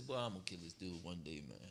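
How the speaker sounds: very low, soft, angry grumbling murmur. Acting out Esau still grumbling about his brother: angry muttering as Esau. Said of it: "You still murmuring this around".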